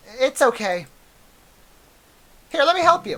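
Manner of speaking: put-on girl character voice. Reading game dialogue aloud as a girl helping pick up papers: Monica voice. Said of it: "My Monica voice is my worst voice".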